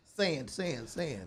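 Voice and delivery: soft, condescending tone. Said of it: "You said it so condescendingly".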